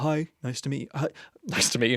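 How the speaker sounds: tough, put-on office phone voice. Recalling answering calls at a headhunting agency, imitating own old phone voice. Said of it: "I would answer the phone like this".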